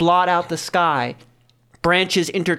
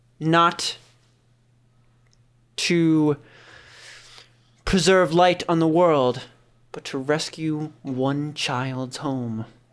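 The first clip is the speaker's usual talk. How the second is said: put-on very old, ancient-sounding voice; 2 semitones lower than usual. Voicing a voice heard in the player's mind: ancient voice. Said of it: "Ancient, filled with times past".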